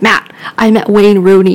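plain

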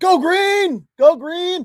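very high, very slow, shrill cheering yell. Retelling what a woman at the game did: imitating someone yelling. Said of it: "She yells".

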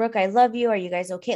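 put-on rushed, breathless rambling speech. Retelling a mother's phone call to her daughter: imitating rushed rambling speech. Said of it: "just rambling, ... get everything out in one breath".

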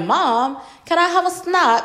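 put-on British accent, high-pitched, slow, drawn out. Retelling what her son said after watching the show: imitating son's British accent. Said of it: "that was my best impression".

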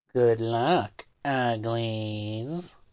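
put-on wicked witch voice with drawn-out "uglies". Signing off to the audience, calling them uglies, in a wicked witch voice. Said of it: "That's why I try to do that voice".

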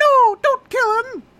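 very high, shrill, loud, squeaky squeal. Recapping a show scene, the speaker voices the machine as Mickey Mouse. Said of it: "That's my voice for the machine now!".

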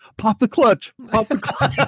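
shrill, very high, urgent shouted yell. Retelling a dream of pushing a broken-down Tesla: imitating a yell. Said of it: "I'm yelling".

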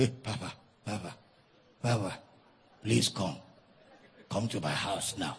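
hushed, urgent half-whisper. Retelling a frightened church member's phone call: imitating a half-whisper. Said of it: "the man was whispering".

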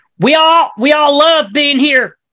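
Midwest accent impression. Joking about late-night fireworks in conversation, Midwest accent impression. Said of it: "That's my impression of Midwest".

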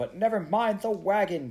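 loud, high shout. Narrator reads Kizzy answering Elizabeth over the noise of flames, shouting back. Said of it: "Kizzy shouted back".

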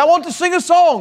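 very high, preacher-style Scottish brogue. Retelling how the old preacher opened from the pulpit: Doctor Hughes's Scottish brogue. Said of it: "he had a Scottish brogue".

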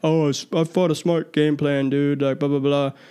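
poorly done fighter voice, complaining. Mocking a fighter's excuse after a fight: Israel Adesanya impression. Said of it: "That's my best Izzy Adesanya, um, impression, which isn't very good".

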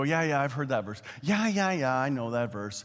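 careless, offhand, dismissive brush-off tone. Warning the listeners not to gloss over a verse: imitating someone dismissively glossing over. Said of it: "Don't gloss it over".

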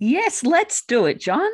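eager, excited, loud and high. Asked if ready to be interviewed, the guest answers the interviewer excitedly. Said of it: "you sound pretty excited".

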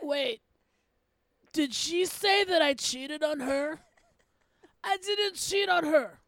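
put-on elderly man's voice. Speaker imagines residents at an old folks' home reacting, in an old guy voice. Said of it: "Is that your old guy voice?".

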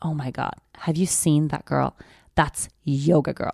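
put-on disgusted tone. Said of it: "And she said it with that voice".

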